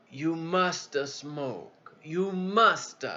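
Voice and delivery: Italian accent impression. Retelling the captain's reply to a question, italian accent impression. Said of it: "That was the Italian way of saying it".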